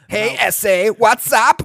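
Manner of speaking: high-pitched, loud Kazakh-style accent.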